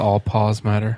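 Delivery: ordinary delivery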